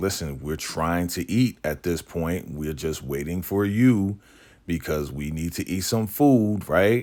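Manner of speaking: ordinary talk, nothing marked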